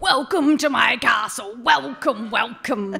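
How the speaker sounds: very loud, booming, grand king voice. Retelling a brother doing voices while reading a book: imitating a big Santa Claus king voice. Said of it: "big Santa Claus king going".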